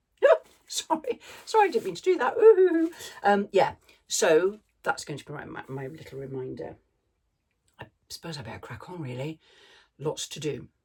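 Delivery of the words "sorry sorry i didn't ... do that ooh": high-pitched, teary, laughing through tears. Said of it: "Oh, I'm getting all teary".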